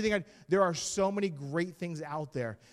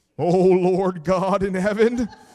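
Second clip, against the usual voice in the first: booming, quavering, very loud preacher voice; 13 dB louder than usual. Mocking how people change their voice to talk to god, shaky holy man voice. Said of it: "put your holy man voice on".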